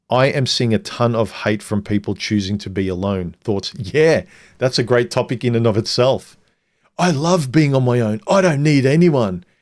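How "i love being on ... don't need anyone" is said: heated, fierce, angry delivery. Responding to a read-out question about being alone, angry. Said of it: "you you sound very angry".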